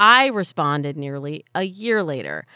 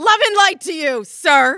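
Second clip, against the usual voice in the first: mock aggressive, very high, shrill, loud, combative; 12 semitones higher, 6 dB louder than usual. Retelling the line they turn around and say to someone: mock-aggressive tone. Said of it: "I say it in like a really aggressive tone".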